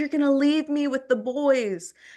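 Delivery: mock tearful, sobbing cry. Retelling a parent's tearful plea when leaving home: imitating mom sobbing. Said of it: "she started sobbing".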